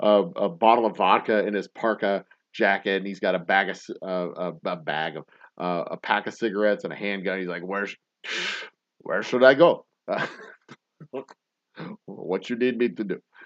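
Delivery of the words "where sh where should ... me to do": badly done, terrible put-on Ukrainian accent. Acting out a man with vodka, cigarettes and a handgun, in a terrible ukrainian accent. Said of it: "that's my terrible Ukrainian accent".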